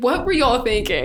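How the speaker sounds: ordinary talk, nothing marked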